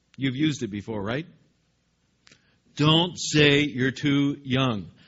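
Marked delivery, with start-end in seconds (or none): 2.8-4.9 firm, stern parent voice laying down the law. Speaker acting out God's words to Jeremiah for the parents listening, stern parental tone. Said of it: "can't you just hear that parental tone?".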